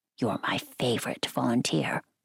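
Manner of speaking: whisper. A woman confides to the narrator, a volunteer, in a conspiratorial whisper. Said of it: "she lowered her voice to a conspiratorial whisper".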